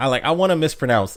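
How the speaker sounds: usual speaking voice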